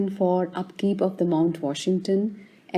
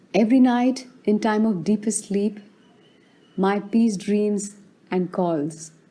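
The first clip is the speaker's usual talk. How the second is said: ordinary delivery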